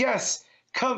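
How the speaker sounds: play-acted, high, manic, unhinged maniac voice. Retelling a comic scene where Azrael faces a werewolf: Azrael yelling like a maniac. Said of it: "I always imagine Azrael talking like a maniac, like, just yelling".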